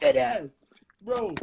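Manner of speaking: put-on, laid-on New York accent. Joking about how to say a slang phrase, new york accent. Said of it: "put a New York hat on on their head".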